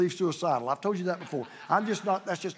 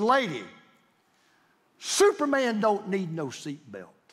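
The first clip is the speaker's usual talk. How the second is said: put-on loud boastful voice, much slower. Retelling Ali on a plane, told to fasten his seatbelt, retelling Ali's loud shout. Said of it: "he said as loud as everybody in the plane could hear it".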